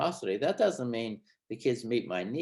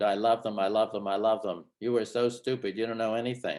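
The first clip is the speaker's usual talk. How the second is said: usual speaking voice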